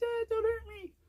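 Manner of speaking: very high, soft, scared, pleading tiny animal voice. Acting out how raccoons look before the broom comes out, mock-scared pleading raccoon. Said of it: "they just look all like".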